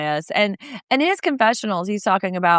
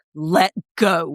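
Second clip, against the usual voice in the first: mock-stern, put-on woman's voice; 4 semitones lower than usual. Describing how Lisa rounds up the horses, imitating Lisa's stern voice. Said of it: "she uses her stern voice".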